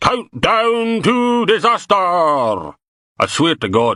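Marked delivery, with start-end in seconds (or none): 0.0-2.0 very high, big dramatic theatrical trailer-style voice. Bob retells what a psychologist said: big dramatic voice. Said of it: "Bob put on a big dramatic voice".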